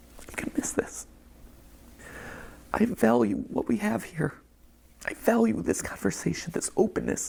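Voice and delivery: hushed, high, tearful voice cracking with emotion.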